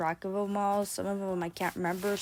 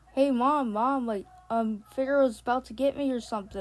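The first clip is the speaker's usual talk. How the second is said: put-on frightened, loud, scared pleading voice; 4 semitones higher, 5 dB louder than usual. Retelling running to mom after a dream, acting out a scared plea. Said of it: "I said in a scared voice".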